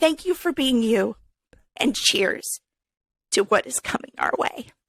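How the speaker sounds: voice catching, choked-up and teary. Raising a toast to a friend who just thanked her, about to cry. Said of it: "I'm going to cry".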